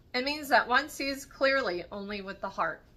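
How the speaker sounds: plain reading voice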